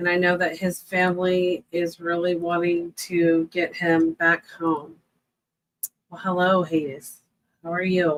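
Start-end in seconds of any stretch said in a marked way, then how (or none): 6.1-8.2 low-energy, unwell-sounding, not perky. Greeting Hades while feeling unwell, not sounding perky. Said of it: "if I don't sound so perky".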